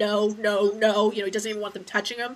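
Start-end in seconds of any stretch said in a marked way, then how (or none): 0.0-1.1 loud, desperate yell. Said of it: "and he yells at him".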